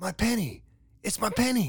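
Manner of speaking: very high, very loud cry of glee. A boy jumps to his feet beside his brother, crying out. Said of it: "Marty cried, jumping to his feet".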